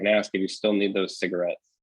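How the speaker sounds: ordinary delivery, nothing marked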